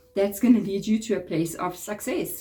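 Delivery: normal talking voice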